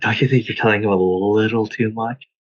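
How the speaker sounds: hushed whisper. A player in a tabletop game whispers aside to Geralt, whispering. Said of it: "And I whisper to him".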